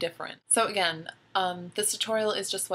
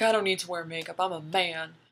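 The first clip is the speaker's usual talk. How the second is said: low, deep guy voice, laid on for show; 2 semitones lower than usual. Makeup advice speaker quotes guys who cosplay, in a mock deep voice. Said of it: "[in deep voice]".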